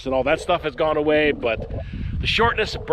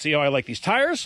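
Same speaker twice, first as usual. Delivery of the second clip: ordinary talk, nothing marked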